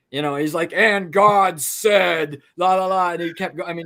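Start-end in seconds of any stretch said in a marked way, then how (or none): 0.8-3.2 put-on loud, slow, drawn-out Southern old-time preacher. Describing fade-in sounds of a 1940s preacher during a lightning show, Southern Baptist preacher voice. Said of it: "a Southern Baptist kind of a preacher".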